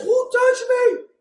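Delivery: very high-pitched, piping voice. Retelling a Bible story, the speaker quotes Jesus asking who touched him, in a high voice. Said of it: "Not the high voice like that".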